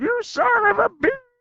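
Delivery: very high mock scream. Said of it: "Cleveland screams".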